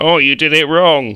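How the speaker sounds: high, loud mock shouting.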